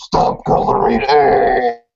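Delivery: death metal growl. Picturing Linus telling others to stop coloring eggs: death metal voice. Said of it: "saying that in a death metal voice".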